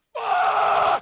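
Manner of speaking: yelling really loud. Reacting in a played clip, yelling really loud. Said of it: "Whenever [name] yells really loud".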